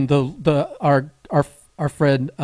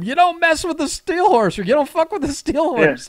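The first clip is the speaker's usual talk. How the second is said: put-on high, hollered yell; 13 semitones higher than usual. Retelling a skit where someone yells from the locker room: imitating someone yelling. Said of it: "someone yells from the locker room".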